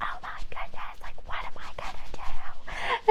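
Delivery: silent panic, whispered, panicky fretting. Retelling being locked out while the tub fills: imitating silent panic. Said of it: "silently panicking".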